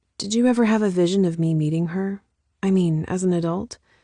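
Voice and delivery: ordinary delivery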